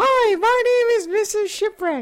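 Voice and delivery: very high, loud, pushed-up woman's voice. With the usual co-host away, a host opens with a Mrs. Shipwreck impression. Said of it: "that sounds just like her".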